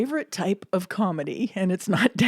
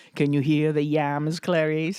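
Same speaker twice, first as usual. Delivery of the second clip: creepy, low, deep movie-villain voice, pitched down; 4 semitones lower than usual. Joking about yams, putting on a Hannibal Lecter voice. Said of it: "you had a good Hannibal Lecter".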